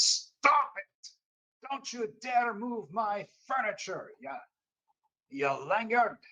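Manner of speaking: sudden furious outburst, shrill, very high yell. Voicing Enoch, who turns on another character over his furniture: yelling angrily. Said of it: "Enoch just suddenly turns on you and says".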